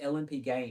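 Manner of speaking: ordinary talk, nothing marked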